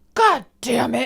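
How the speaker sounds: frustrated child voice, imitated. Retelling how a toddler imitated a dad fixing the floor: frustrated yell. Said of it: "he's imitating my dad fixing stuff".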